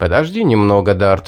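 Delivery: ordinary delivery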